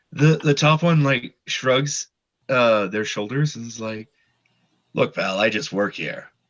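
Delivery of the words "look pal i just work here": deep, low-pitched creature voice. The top kobold shrugs its shoulders and answers: deep-voiced kobold. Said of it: "much deeper voiced kobolds than I'm used to".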